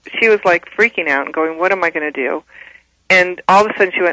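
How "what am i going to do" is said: plain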